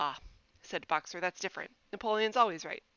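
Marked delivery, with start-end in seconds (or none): none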